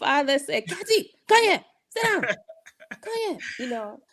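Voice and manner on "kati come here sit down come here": put-on high-pitched Liberian accent. Explaining how you pick up your parents' accent, imitating father's Liberian accent. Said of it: "talk to you in that Liberian a- accent".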